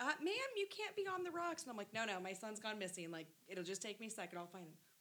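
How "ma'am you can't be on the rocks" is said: put-on very high, small, young kid voice. Retelling a teen lifeguard stopping her at the water, in his little high-pitched voice. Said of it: "his little high-pitched voice is".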